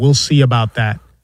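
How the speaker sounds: put-on deadpan delivery. Recounting a reply to a doubter, retelling Jalen Brunson's deadpan. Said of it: "And Jalen Brunson just deadpan".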